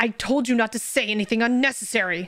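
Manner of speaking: loud shouting.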